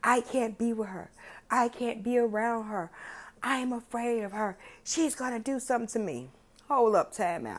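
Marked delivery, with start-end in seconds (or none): 0.0-6.3 mild, worked-up man's hollering. Speaker recounts what a man hollered after antagonizing a woman: retelling hollering. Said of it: "He was hollering".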